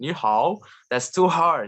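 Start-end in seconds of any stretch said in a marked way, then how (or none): 0.0-0.6 ni hao pronounced with Chinese pronunciation, trying to sound Chinese. Showing how hard chinese sounds: trying to sound chinese. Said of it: "when I try to sound like, uh, Chinese".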